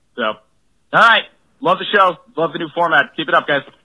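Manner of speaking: clear, polished voicemail delivery with even cadence. A listener leaves a voicemail praising the show, great voicemail voice. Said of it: "the best voicemail voice and cadence".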